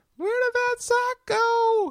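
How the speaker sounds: shrill, high-pitched woman voice. Imitating the speaker's wife about the missing sock, in a high, shrill voice. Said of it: "with my high, shrilly voice".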